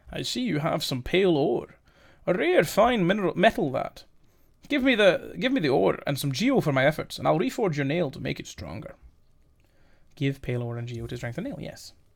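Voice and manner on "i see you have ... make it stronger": put-on character voice in Scottish accent. Voicing a game character in a scottish accent. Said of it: "I believe he was Scottish".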